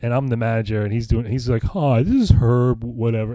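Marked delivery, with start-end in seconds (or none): 1.6-2.8 goofy put-on old man voice, louder, slower. Remembering an old man he managed, speaker imitates Herb's slow goofy voice. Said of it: "He was so goofy and talked so like slow".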